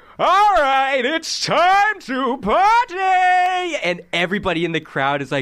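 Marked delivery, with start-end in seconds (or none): 0.2-3.8 rowdy, very high, very slow, drawn-out party shout. Voicing a librarian who suddenly calls out to the crowd: loud party voice, unlike a librarian. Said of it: "a voice that should not be related to a librarian".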